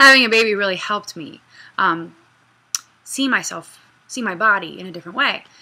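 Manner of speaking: choking up, fighting back tears mid-sentence. Talking about having a baby, the speaker is holding back tears. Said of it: "I'm trying not to cry".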